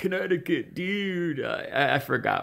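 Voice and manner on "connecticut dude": put-on nasal surfer-dude accent, much higher. Quoting the surfer dude from the surfboard rental, in a nasal surfer-dude accent. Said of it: "he was talking with that nasal surfer accent".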